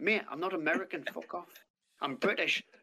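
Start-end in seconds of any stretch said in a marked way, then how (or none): none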